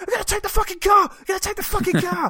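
shrieking, shrill scream pitched way up high. Describing a film scene, acting out a character running at a police robot: acting out a scream. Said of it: "screaming like".

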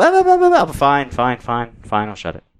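deliberately bad, put-on sing-song voice. Retelling an argument about the water valve: bad impression of his wife. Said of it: "That was a bad impression of your wife".

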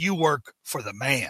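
low, quiet delivery. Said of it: "And Randy says".

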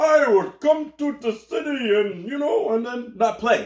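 put-on Indian accent. Imitating a basketball player who came to the city and didn't play: Indian accent. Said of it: "that was an Indian guy accent you did".

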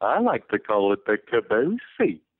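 slow, drawn-out, pitch-swooping cartoon dog voice. Speaker doing a Goofy line they always say to their son, Goofy impression. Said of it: "Know I did a Goofy impression".

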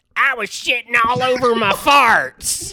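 very high, goofy, put-on comic voice. Showing friends a Larry the Cable Guy impression they asked to hear. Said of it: "do you wanna hear my Larry the Cable Guy".

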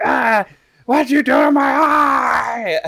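put-on very high drawn-out scream, "eye" stretched long. Reenacting someone screaming at an opponent during a match, retelling a scream. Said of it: "just screaming at him, like".

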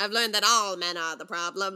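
fun, playful put-on supervillain voice. Reading a post aloud as a fun supervillain, in an Ursula voice. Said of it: "Ursula voice".

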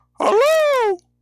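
very high, calling-out town crier voice. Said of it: "Guild Crier enters".

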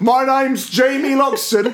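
very high, slow, announcer-like shout. Acting out someone arriving to attack a classmate: mock shouting a name. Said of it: "go around shouting".

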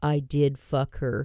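imitated whisper. Retelling what a tall man at the bar said: imitating a whisper. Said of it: "whispers in my ear".

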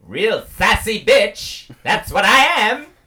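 very high, loud, belted actress voice. Claiming to be Storm from X-Men, in a Halle Berry impression. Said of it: "That's a spot-on Halle Berry impression".

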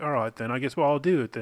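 plain

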